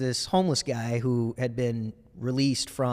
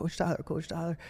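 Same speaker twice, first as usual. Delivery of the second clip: put-on crying child voice, higher and quieter; 5 semitones higher, 6 dB quieter than usual. Retelling how a student ran in calling for the coach, imitating a crying kid. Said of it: "he's crying".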